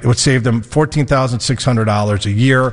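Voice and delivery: ordinary talk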